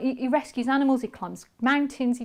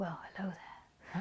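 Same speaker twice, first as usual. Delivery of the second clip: very soft, hushed, breathy voice; 5 semitones lower, 16 dB quieter than usual. Describing the start of a sleep story on an app: Matthew McConaughey voice. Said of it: "like Matthew McConaughey. He goes".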